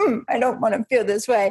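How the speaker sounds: put-on self-pitying, sulky little-girl pouting voice. Retelling how she pouts when upset: imitating own pouting voice. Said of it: "I pout and I'm like".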